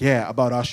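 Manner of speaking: very low, put-on deadpan, dead-serious delivery. Retelling a friend's answer about his girl seeing usher, retelling a dead-serious reply. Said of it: "dead ass looked me in the eye".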